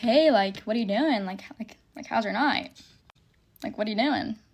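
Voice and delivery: put-on nonchalant, casual tone. Retelling a late-night phone call to Trayden at the bar: imitating own nonchalant tone.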